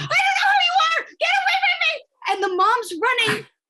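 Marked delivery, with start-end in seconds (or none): 0.0-1.9 put-on acted-out shrill, very high child's screaming. Telling about a kid running out of the store, imitating a kid screaming. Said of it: "screaming the whole time".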